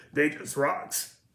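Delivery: put-on rough drunk-sounding voice. Quoting a guy's Drunk He-Man segment, doing his gruff voice. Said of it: "he's got this gruff voice".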